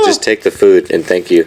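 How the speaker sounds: normal talking voice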